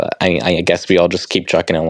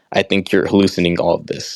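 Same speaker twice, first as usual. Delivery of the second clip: plain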